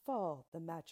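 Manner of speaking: ordinary delivery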